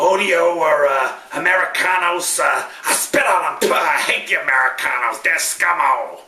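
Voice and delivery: terrible, heavily laid-on fake Spanish accent. Ending an episode with an out-of-context movie quote: Danny DeVito's horrible Spanish accent. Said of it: "Crazy Danny DeVito doing his horrible Spanish accent".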